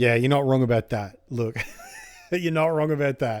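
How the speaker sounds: talking through laughter mid-sentence. Telling a story about a relationship, the speaker agrees with someone while laughing while talking. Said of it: "sorry I'm laughing".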